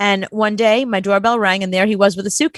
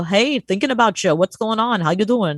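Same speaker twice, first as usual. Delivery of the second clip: failed put-on accent drifting toward a Queens accent. Retelling an old friend's surprise phone call, a failed Queens-like accent. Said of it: "I can't do the accent at all, and even that was more like something Queens".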